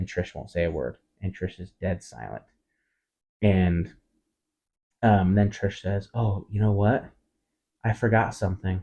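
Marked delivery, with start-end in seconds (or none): 6.1-8.8 very icy, stone-cold voice. Telling a story, the speaker quotes the driver's reply, retelling a stone-cold line. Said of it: "in like a very stone cold voice".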